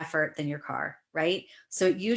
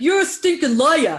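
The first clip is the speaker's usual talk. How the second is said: put-on New York accent delivery; 8 semitones higher, 11 dB louder than usual. Retelling what a woman said to them, the speaker recasts it: put-on new york accent. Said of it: "in a New York accent would be like".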